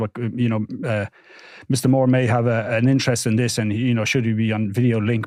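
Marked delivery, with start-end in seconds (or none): none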